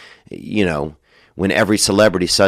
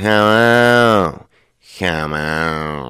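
very slow, lingering drawl, "on" drawn out; 2 semitones lower than usual. Speaker imitates a friend's brother from back home, in a very slow drawl. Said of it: "he had the slowest drawl".

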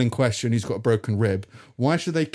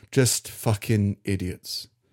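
mumbled, barely voiced, muttered under the breath; 3 semitones lower than usual. Retelling own reaction to the bank's staff: muttering under breath. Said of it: "I found myself muttering under the, under my breath".

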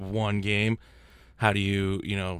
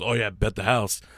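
usual speaking voice

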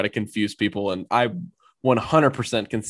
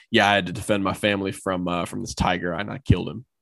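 put-on totally serious, dry, flat deadpan. Retelling a player's joke to a coach: imitating Prince Tega deadpan. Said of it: "deadpan looked Gus straight in the face and said".

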